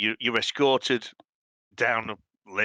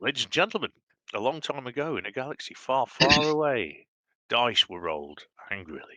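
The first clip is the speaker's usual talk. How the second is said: seedy, suggestive announcer voice with lascivious overtones; 2 semitones higher than usual. Opening the game for the group once it's time, seedy-sounding delivery. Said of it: "That was a bit seedy".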